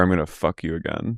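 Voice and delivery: put-on whisper. Acting out what a woman whispered in a man's ear, retelling a whisper. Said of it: "She whispers in his ear".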